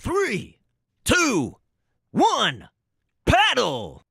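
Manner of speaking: very high, swooping, sing-song game announcer voice. Voicing the announcer for a friend's indie game, game announcer voice. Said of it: "that's my voice as the announcer".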